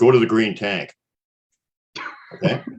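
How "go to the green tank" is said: put-on big, bold, authoritative male voice. Recounting first hearing a voice while walking along: imitating a bold, authoritative male voice. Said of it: "this big, bold, authoritative male voice says".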